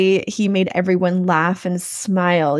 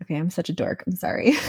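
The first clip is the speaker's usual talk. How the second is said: ordinary talk, nothing marked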